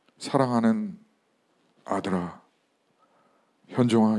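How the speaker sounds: very soft, gentle, tender voice. Speaker retells the Lord calling him by name, retold in softest gentle voice. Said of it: "가장 부드러운 목소리로".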